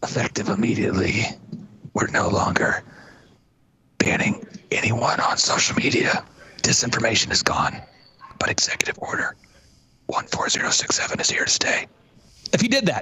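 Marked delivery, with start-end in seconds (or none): 0.0-11.9 hushed, breathy whisper close to the mic. Imitating Joe Biden announcing an order at the mic, whispering. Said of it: "he whispers and he says".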